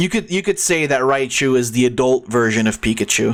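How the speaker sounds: ordinary delivery, nothing marked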